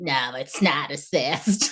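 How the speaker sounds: very slow cartoon voice, every word drawn out. Retelling what a hospital worker said during a scan: Roz from Monsters, Inc. voice. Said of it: "her voice sounded like".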